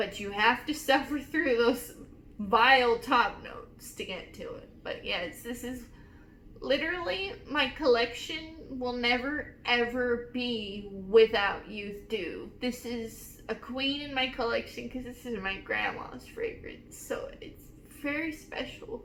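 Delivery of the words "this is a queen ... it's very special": soft, whispered, tearing-up voice. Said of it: "I'm tearing up thinking about it".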